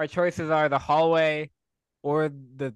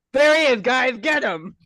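very high, loud shout; 9 semitones higher, 6 dB louder than usual. Running from guards, pointing back at one: shouting to the guards in character. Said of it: "I turn around and I point to one of them and I just go".

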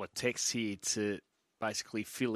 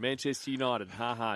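usual speaking voice

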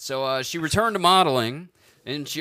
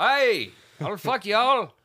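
stagey, pitched-up, put-on Irish brogue; 7 semitones higher than usual. Told to do it irish now, repeating the line in an irish accent. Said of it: "Irish now".

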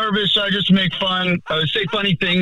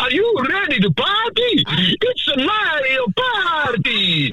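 very high, swooping, sing-song cartoon voice; 10 semitones higher than usual. A voicemail message opens with a party invitation, in a Mario voice. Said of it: "i was good at doing the mario voice".

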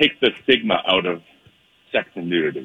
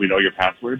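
ordinary talk

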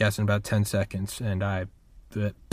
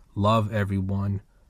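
ordinary delivery

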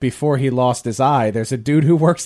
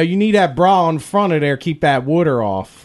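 put-on Philadelphia accent. Chatting with friends about pimped-out cars, in a Philadelphia accent. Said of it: "When I did that voice".

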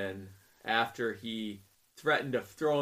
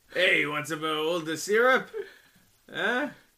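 raised, high put-on Quebec French accent; 6 semitones higher, 6 dB louder than usual. Telling a canadian joke, in a quebec french accent. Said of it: "That's my Quebec accent".

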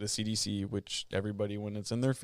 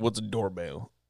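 joking put-on Southern accent, played for laughs. Joking about a family that keeps its dog chained to a tree: joking southern accent. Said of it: "Are you trying to roll with the Southern accent?".

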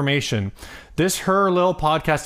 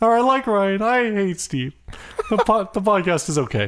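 fake sobbing while talking, higher; 6 semitones higher than usual. Talking with another speaker through sobs: fake sobbing while talking. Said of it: "through your sobs".

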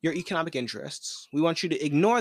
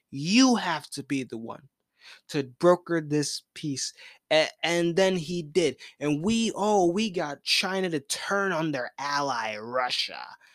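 plain

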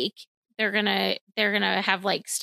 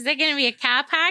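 put-on clumsy, terrible Boston accent, pitched up; 6 semitones higher, 4 dB louder than usual. Riffing on why the characters are from Boston, in a terrible Boston accent. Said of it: "that is a terrible accent".

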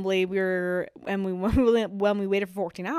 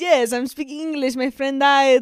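fake Italian accent, pitched up; 5 semitones higher, 4 dB louder than usual. Acting out telling Paris police that a friend died: put-on accent sounding Italian. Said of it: "What is your accent?".

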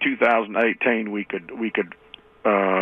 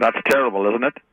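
ordinary talk, nothing marked

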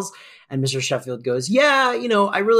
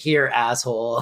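mock deadpan delivery, much lower pitch; 5 semitones lower than usual. Praising a moment they love, quoting its line with a deadpan delivery. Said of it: "And then the deadpan just like".

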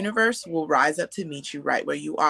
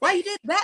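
very high, nasty, rude voice. Retelling how the inner voice talked to them: imitating a rude inner voice. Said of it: "my inner voice used to be real rude to me".

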